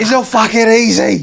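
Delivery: mock very loud, shrill, drawn-out angry rant. Retelling a reply to someone saying it's easy money: imitating an angry rant. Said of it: "he did a rant".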